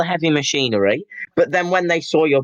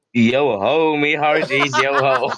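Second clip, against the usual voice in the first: put-on, pirate-like voice. Asked for words of wisdom while pretending to be the star, answer in a Johnny Depp impression. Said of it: "Artie's impression of Jonny Depp".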